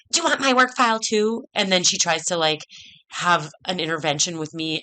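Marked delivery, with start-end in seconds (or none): 0.1-1.4 snide, high, little bitchy voice. Retelling what a woman said when you asked about employee files, imitating Carly's little bitchy voice. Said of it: "Carly in her little bitchy voice".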